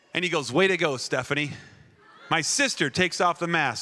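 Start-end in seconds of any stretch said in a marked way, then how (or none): none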